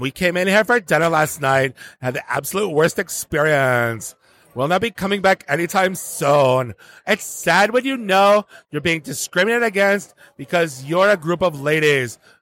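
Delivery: aggrieved, complaining reviewer voice. Reading a restaurant review aloud as its writer: imitating Maria. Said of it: "I'm gonna do my best Maria impersonation".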